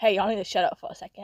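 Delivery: dead serious, grave tone. Retelling how a friend told the group to be quiet: imitating a friend being dead serious. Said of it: "being dead serious".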